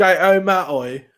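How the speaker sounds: put-on British accent. Joking about pronouncing Harry Potter, British accent. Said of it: "with doing a British accent".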